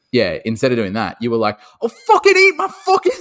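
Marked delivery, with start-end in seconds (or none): 1.8-3.1 bad put-on Irish accent, very high-pitched and loud. Imitating what the other speaker once said, in a bad irish accent. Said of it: "that's not a good Irish accent".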